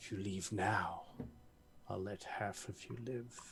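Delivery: very quiet, deep, low rumbling voice. Narrating the scene, the speaker voices a disembodied voice in a deep, rumbly voice. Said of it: "speaking in a deep, rumbly tone".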